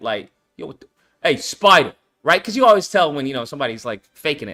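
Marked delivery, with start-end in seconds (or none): 0.0-1.9 New York accent, much lower pitch. Describing the voiceover actors wanted for a game, in a new york accent. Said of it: "mofos who talk like that".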